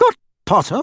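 sharp, high-pitched tone. A professor hears a man claim they've got Potter and questions it, sharp. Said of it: "Said Professor McGonagall sharply".

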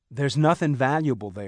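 plain reading voice

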